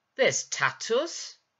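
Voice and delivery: very loud, defiant outburst. Nine answers Gwyn's remark, defiantly. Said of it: "she said defiantly".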